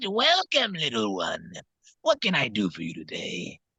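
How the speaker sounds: raspy, smoky, rasped-up voice. Showing the voice they used when greeting someone, raspy smoky voice. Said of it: "I gotta rasp it up a little bit. And so I brought it up like that".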